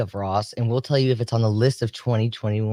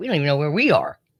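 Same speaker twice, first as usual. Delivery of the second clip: mock teasing, playful, lighthearted joking tone; 4 semitones higher than usual. Retelling what one mom said, imitating her put-on joking tone. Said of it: "And she was being funny".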